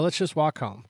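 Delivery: ordinary delivery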